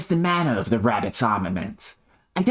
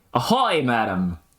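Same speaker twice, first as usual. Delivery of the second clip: put-on Australian accent, not quite landing. Reading a game character's line aloud: attempted Australian accent. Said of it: ""Ahoy, madam" in a fucking Australian accent".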